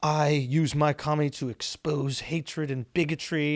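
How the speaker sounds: slow, drawn-out, stupid-sounding put-on British accent. Mocking an award-show speech: stupid British accent imitating Sacha Baron Cohen. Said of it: "his, like, stupid British accent".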